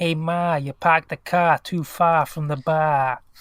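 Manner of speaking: put-on Boston accent, loud and slow. Stock phrase used to attempt an accent: attempted Boston accent. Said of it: "if I want to try and attempt to do a Boston accent. It's like".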